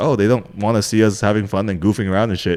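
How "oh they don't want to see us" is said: ordinary delivery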